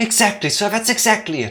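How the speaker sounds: put-on eager, worked-up excitement. Doing character voices in a scene, replying to someone called sir: excited voice. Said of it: "doing these excited voices".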